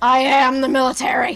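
agitated shouting. Told that it doesn't work that way, a man insists again, agitated shouting. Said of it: "you can calm down".

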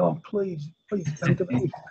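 soft, high, begging, pleading tone. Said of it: "Rather than begging".

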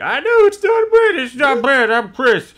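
very high-pitched, insistent voice. Retelling what Chris is usually the first one to say: imitating Chris. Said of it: "Chris usually is the first one to be like".

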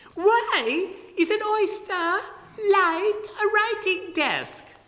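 sudden jump way up into high falsetto. Narrating a story, the Carpenter calling out to the Walrus, the Carpenter's falsetto. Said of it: "in a voice keyed to falsetto".

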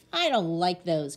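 growled delivery. Narrating a young man refusing the boots a salesman offers, growled. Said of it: "growled Harry".

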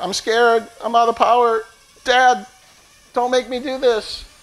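high, frightened, droning machine voice. Voicing the low-battery drone begging not to fly: voicing the drone as scared. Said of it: "It's like".

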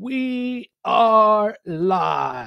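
bad, high, swooping fight-night ring announcer call. Imitating the Octagon announcer opening a UFC main event: horrible Bruce Buffer imitation. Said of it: "it's a horrible imitation".

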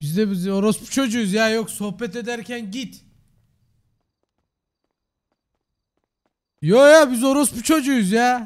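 yelling out loud. In a group voice chat, one speaker shouting at the others. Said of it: "Neden bağırıyorsun?".

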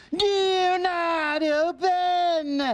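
high-pitched, open, drawn-out stretched call. Repeating the sign's warning to someone about to open it, shouting.

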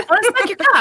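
sudden, very high, loud blurt. Retelling someone with Tourette's blurting out: imitating a loud blurt. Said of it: "It's so fucking loud".

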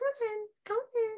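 very high, very gentle and soft coaxing voice. Retelling calling someone in, at first doing it really softly. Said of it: "I'm doing it really softly".

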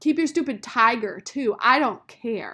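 full-throated, very loud yelling shout. A girl marching away from Rob shouts back at him. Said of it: "she shouted".

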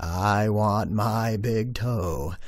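deep, very slow, looming monster voice. Telling a scary story, the speaker voices the monster in a deep voice. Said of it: "this deep voice that says".

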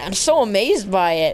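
ordinary talk

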